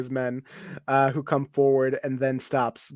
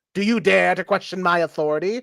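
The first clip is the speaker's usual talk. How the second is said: put-on high-pitched, basic British villain accent; 5 semitones higher, 4 dB louder than usual. Voicing a shifty warlord questioning intruders: basic british evil guy accent. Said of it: "basic British, like, evil guy".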